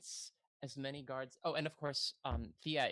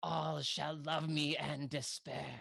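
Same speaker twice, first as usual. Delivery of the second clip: voice booming loudly. Voicing a character who magically makes her voice shake the room: booming voice. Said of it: "makes her voice boom throughout the r-".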